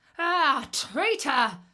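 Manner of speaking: loud, high, furious howl of rage. Reading a fable, the Wolf cries out at the Fox, howling with rage. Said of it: "howling with rage".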